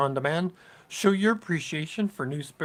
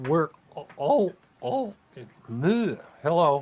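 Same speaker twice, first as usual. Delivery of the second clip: voice cracking and breaking mid-phrase; 4 dB louder than usual. Host introducing a prayer ceremony to new people, voice cracking. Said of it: "my voice is cracking over here".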